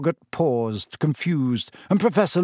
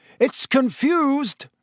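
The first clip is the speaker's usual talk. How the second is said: shouted out, very high and raised; 9 semitones higher than usual. Narrator reading a story, voicing a character's line: shouting. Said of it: "shouted Lupin".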